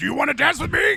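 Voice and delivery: very high, very loud, rough, rasping, belted voice. Retelling a favorite episode where Ray was given a new voice: Strong Bad voice. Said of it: "gave Ray like the Strong Bad voice".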